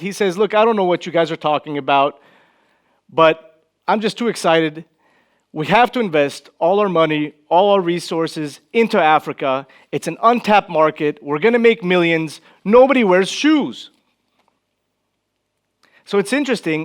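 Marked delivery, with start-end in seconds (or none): none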